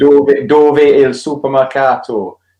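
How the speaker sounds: put-on Geordie accent. Recalling school italian lessons taught by a geordie, in a geordie accent. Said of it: "that's my best Geordie".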